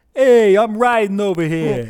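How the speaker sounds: put-on loud, high-pitched New York accent. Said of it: "It's his New York accent".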